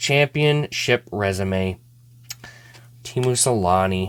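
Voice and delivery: low, slow, audibly disappointed. Opening packs hoping for the whole set, the speaker names the card, disappointed. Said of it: "you can hear the disappointment in my voice".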